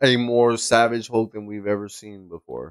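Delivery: ordinary delivery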